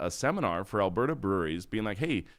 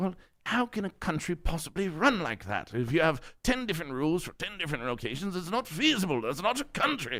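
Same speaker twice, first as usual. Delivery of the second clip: put-on English accent, pitched up; 7 semitones higher than usual. Retelling an interview on a podcast from england: put-on english accent. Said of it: "the accent I'm about to do".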